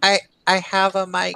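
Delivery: small voice, shrunk right down. Speaker retelling a player switching on his mic, in a small little voice. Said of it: "there's this little voice".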